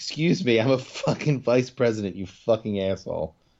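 sudden, fired-up, excited outburst, all worked up. Retelling a character's retort after being called D-girl: imitating an excited outburst. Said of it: "the only time she got excited about anything".

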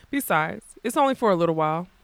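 ordinary talk

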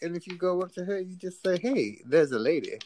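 pitched way up, hammy and funny. Quoting the lead of the movie The Ladies' Man giving advice: The Ladies' Man impression. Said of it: "that movie, The Ladies' Man".

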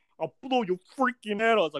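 put-on New York accent. Retelling what a guy shouted during a standoff, in a heavy New York accent. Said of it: "everyone knows that New York accent".

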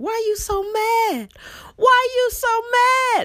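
very high, loud, stretched-out, drawn-out scream. Retelling how the mc at a spoken word show kept screaming: imitating someone screaming. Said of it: "the M C kept screaming".

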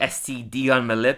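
normal talking voice

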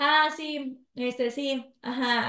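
very slow, smug, cocky, insolent, arrogant drawl. Retelling a story, acting out Menor's reply to the king: imitating Menor's insolent, arrogant tone. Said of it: "así como bien, bien desolente y prepotente".

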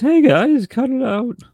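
put-on squeaky, very high, loud, cracking cartoon teenager voice. Describing a teenage referee at a wrestling event: young Shane McMahon impression. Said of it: "He talked like the teenager from The Simpsons".

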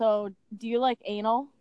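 mock deadpan, dead-serious tone. Retelling a date's question at a bar: imitating a dead-serious question. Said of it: "he's dead serious".

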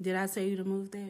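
ordinary talk

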